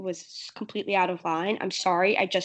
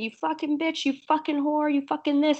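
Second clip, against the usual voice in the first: put-on screaming voice, higher; 8 semitones higher than usual. Describing how Teresa argues at the reunion: imitating Teresa screaming.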